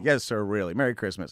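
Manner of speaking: hammed-up, exaggerated, gracious politeness. Retelling own words to a customer at the tent, imitating own hammed-up politeness. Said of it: "I played up real big".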